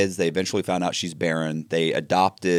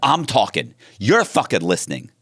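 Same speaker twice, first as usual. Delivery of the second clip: mock furious outburst, faster; 3 semitones higher than usual. Retelling telling off a man who interrupted him, retelling a furious outburst. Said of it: "I was just I was furious with him".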